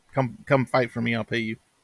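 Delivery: ordinary talk, nothing marked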